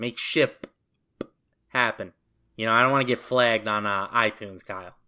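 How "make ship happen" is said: slow, with the p in ship hit hard. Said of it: "emphasize the, the P there".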